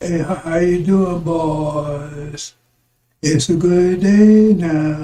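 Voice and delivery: put-on very slow, lazy drawl, "boys" stretched. Recalling a man they nicknamed Lightning, imitating him: Stephen Fletcher's slow talk. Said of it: "He talks slow".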